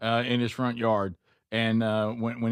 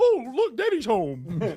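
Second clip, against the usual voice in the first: very high, slow, drawn-out put-on doggy voice; 13 semitones higher than usual. Retelling a coworker voicing his dog: imitating a put-on dog voice. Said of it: "he does the dog voice the entire time".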